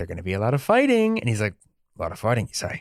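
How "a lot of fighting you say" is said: grizzled knight voice, lower and quieter. Describing recruiting a game character, quoting the knight in a grizzled knight voice. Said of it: "he kind of sounds like a more like grizzled".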